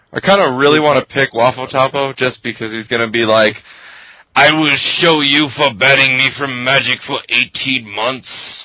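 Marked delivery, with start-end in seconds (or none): 4.4-8.7 poor, horrible, bad French accent. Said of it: "horrible French accent".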